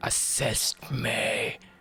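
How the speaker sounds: deep demonic creature voice. Voicing the Wraith as it looks at the spectre: demonic voice. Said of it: "in like a demonic voice".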